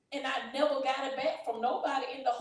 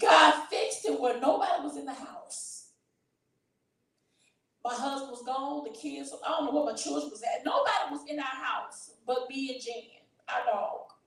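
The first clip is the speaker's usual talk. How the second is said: emotional voice close to tears. Recalling a frightening day alone at home, the speaker talks, emotional. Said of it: "I'm sorry, I'm being emotional".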